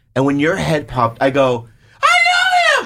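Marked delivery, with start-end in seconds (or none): 2.0-2.9 mock shocked, very high blurted-out yell, drawn-out I. Retelling spotting someone known in a movie trailer: imitating own yell. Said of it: "I yelled that out loud".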